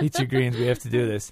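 ordinary delivery

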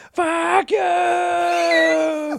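high, flat, shouted yelling.

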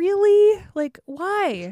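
incredulous, disbelieving reaction.

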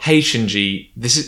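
ordinary talk

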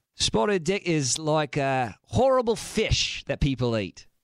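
slow, put-on fake Australian accent. Answering a quiz question in a put-on accent: put-on Australian-sounding accent. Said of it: "I turned into Australian, I think".

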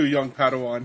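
ordinary talk

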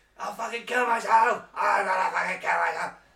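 very high, very loud, shrill scream. Telling a story about their past self, re-enacting screaming. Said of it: "And I'm screaming, like".

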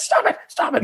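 tearful, crying, pleading tone. Retelling someone begging them to stop: imitating someone crying. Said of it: "But she's crying".

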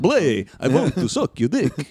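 campy vampire voice with swooping pitch.

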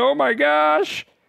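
mock super excited tone. Retelling a girl opening a birthday bag: imitating someone super excited. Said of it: "she's just, like, super excited".

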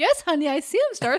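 put-on baby-talk voice, as if to a toddler. Retelling how a line was read: imitating a mom talking to a toddler. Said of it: "like a mom talking to a two-year-old".

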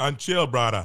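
put-on joking Jamaican-sounding accent. Answering a greeting with a put-on Jamaican-sounding accent. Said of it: "a bit of a Jamaican accent there".

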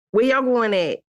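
put-on mixed Philly and country accent. Acting out own way of talking once home: Philly and country accent mix. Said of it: "It's like Philly and country mixed together".

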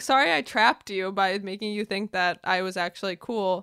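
ordinary delivery

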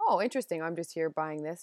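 ordinary delivery

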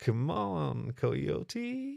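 soft, purring, teasing voice. The kitsune teases the coyote, purring. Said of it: "This was said in a purr".

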